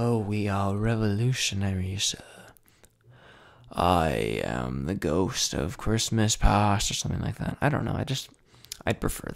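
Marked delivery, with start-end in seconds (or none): 0.0-6.9 heavy, dragged-out menacing villain voice, deep and slow. Suggesting how a character should sound, the speaker demonstrates a really slow voice. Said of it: "He should have this really slow voice like".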